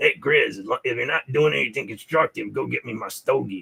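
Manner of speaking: put-on rural country-style accent. Retelling a movie scene where the grandfather speaks to Clark: imitating a rednecky voice. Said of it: "I don't know why I sound rednecky".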